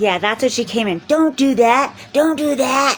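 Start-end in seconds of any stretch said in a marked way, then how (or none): 1.1-3.0 top-of-the-lungs, high, drawn-out shrieking scream. Retelling how someone came in: imitating someone screaming. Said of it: "screaming at the top of her lungs".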